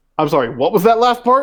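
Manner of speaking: stunned disbelief. Voicing a sergeant who stands back in shock: shocked guard voice. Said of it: "stands back in, in, like, shock".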